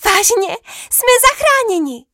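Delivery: shrill shouted cry, very high-pitched. The crowd, hearing the princess agree to help them, shouted. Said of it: "Křičel Dav".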